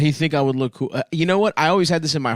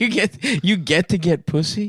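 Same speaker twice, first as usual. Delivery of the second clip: mock crying, higher pitched; 5 semitones higher than usual. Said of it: "he would start crying".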